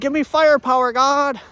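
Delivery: high, loud call, belted out. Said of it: "I said".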